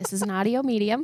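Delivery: quick, gentle, kind but stern tone. Imitating another speaker's way of talking: imitating Greg's kind, stern voice. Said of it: "I call it his kind, stern voice".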